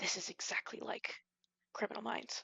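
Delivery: whispering under breath. Describing someone on the stairs, the speaker acts out her line, whispering under her breath. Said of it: "she like whispers under breath and says".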